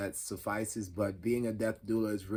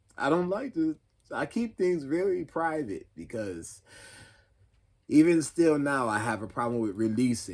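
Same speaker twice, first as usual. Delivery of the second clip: raised, pitched-up, fighting back tears; 5 semitones higher, 7 dB louder than usual. Speaker describing an experience that made them cry: holding back tears. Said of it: "I'm trying not to cry now".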